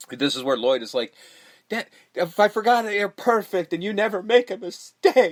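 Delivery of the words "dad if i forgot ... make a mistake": sobbing, crying, tearful voice through the words. Retelling a scene, imitating Lloyd crying as he addresses his dad. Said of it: "And he starts crying".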